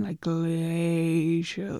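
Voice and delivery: glacial in slow motion, very slow, stretched out. Explaining how to describe a desired speed, demonstrating very slow, stretched words. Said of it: "use my voice to show how slow I mean".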